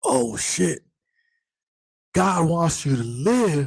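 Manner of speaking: mock very high, swooping, excited cheering. Retelling how Reed started cheering for a man who was being shot at: imitating Reed cheering. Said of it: "Reed starts cheering for this man".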